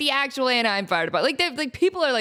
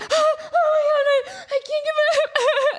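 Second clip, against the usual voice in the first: put-on very high, drawn-out, tearful crying panic. Retelling how a woman got her leg stuck in a railing, imitating her panicked crying. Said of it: "And she's crying".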